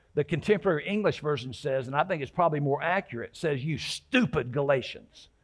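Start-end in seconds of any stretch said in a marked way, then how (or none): 3.6-5.3 frustrated, forceful stress landing on stupid. Quoting a rebuke from a bible version, put-on frustrated stress on stupid. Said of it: "I really added the emphasis of the tone".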